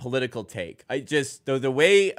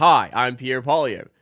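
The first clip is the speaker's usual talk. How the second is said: mock AI narrator voice. Retelling a YouTube ad: imitating an AI voice. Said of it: "There's an A I voice that goes".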